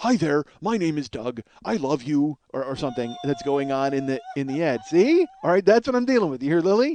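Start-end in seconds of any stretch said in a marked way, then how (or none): 0.0-2.4 voice of a talking dog's voice box. Retelling the Up trailer's talking dog with a voice box: Dug from Up voice. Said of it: "he has, like, a voice box".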